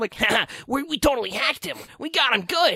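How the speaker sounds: squeaky, very high-pitched, nerdy geek voice. Describing characters who hacked someone's laptop, the speaker does their geeky voice. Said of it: "they sound like that ... I sound like a geek".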